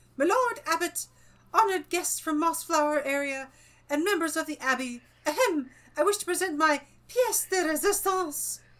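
self-important, pompous little squeak, said grandly. Reading aloud, the narrator voices Hugo addressing the abbot and guests: Hugo's pompous squeak. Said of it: "announced in a somewhat pompous squeak".

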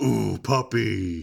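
rough, grating, creaky, possessed demonic croak. While making up a story with others, say it in a demonic voice. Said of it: "it's demonic voice".

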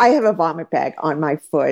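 plain

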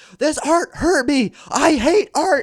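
very high, very slow, drawn-out yelling. Retelling a bit where Eric smashes an art gallery: imitating Eric yelling. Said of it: "he just starts yelling".

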